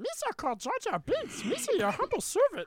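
high, squeaky voice with swooping pitch. Repeating a co-host's impression heard on joining the stream: Jar Jar Binks voice. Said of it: "Elmo voice with a little bit higher".

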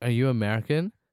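normal talking voice

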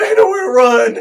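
put-on screaming. Retelling first watching a suspense scene: imitating screaming at the TV. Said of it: "screaming at the T V".

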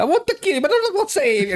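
very high, fast, rattled-off cartoonish Italian accent. Saying the line he tells Bowser: Mario accent. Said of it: "I do it with a Mario accent now".

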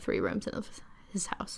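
soft whisper, trailing off.

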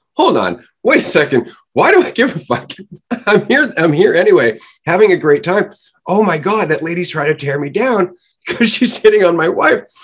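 excited, amused, high, loud, laughing delivery.

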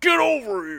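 yelled out, high-pitched and loud. Retelling a game trailer, quoting the other fighter: Scorpion voice. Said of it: "was like".

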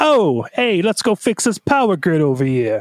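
cartoonish New York accent. Speaker mimicking the characters, in a stereotypical New York accent. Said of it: "Very stereotypical New York accents".

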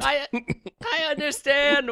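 very high-pitched, terrified, dismayed shrieking scream. Reading a parody scene aloud, a wife answering her yelling husband: acted terrified scream. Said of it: "Wendy screams in terror and dismay".

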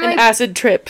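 ordinary talk, nothing marked

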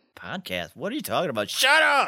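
indignant, exasperated, swooping, rising mad outburst. Acting out how the other host sounded when they first met, mock-angry impression. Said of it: "Is that your impression of me? Why was I so mad?".

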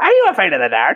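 high, spooky voice. Imagining a spooky host at the end of the credits: Crypt Keeper voice. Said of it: "Don't do that, [name]".

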